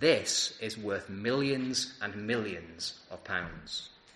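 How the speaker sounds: hushed tones pitched very low. Retelling what people say while holding a precious ornament from a safe, in hushed tones. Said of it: "in hushed tones".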